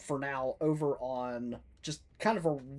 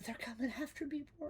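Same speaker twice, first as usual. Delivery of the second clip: sweet tiny voice, higher and quieter; 12 semitones higher, 10 dB quieter than usual. Speaking in character to Rorn through a fog cloud: sweetest little voice. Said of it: "the sweetest little voice ever".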